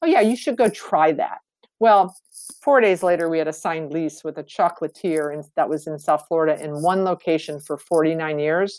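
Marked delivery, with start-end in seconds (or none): 0.0-1.4 very condescending, heavily patronising, talking-down tone. Retelling how the speaker answered someone's suggestion: mock-condescending retelling. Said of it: "very condescendingly said".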